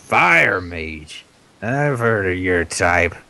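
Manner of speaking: bitter, refined, grumpy, cranky voice. In a role-playing game, voicing the grumpy half-orc priest answering a fire mage. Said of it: "So he's kind of bitter about that. He prefers the wonders of modern civilization. He's very un-half-orc-ish. He's the most civilized grump in history. Yeah, he is a grumpy bastard".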